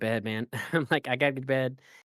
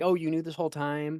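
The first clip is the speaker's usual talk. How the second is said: put-on yelling in a higher pitch; 3 semitones higher than usual. Retelling how a character confronts someone: imitating Luna yelling. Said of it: "kinda yells at him like".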